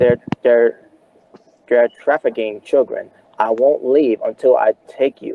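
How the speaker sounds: ordinary talk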